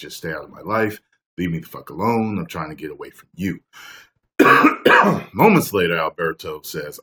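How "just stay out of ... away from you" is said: usual speaking voice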